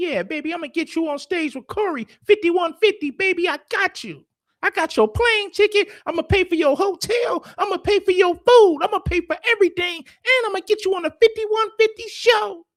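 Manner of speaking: very high squeaky cartoon voice, way up high. Retell the promises Anton made about getting you on the show, in a Mickey Mouse voice. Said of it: "talking with his Mickey Mouse voice".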